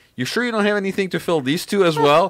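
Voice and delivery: very high, needling, sarcastic voice. Speaker retelling what a woman told them, retelling a sarcastic remark. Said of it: "sarcastically was telling me".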